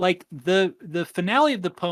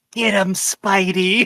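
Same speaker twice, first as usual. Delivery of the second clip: whisper, higher; 3 semitones higher, 5 dB louder than usual. Retelling what mom said during a fight scene: imitating a whisper. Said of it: "whispered in my ear".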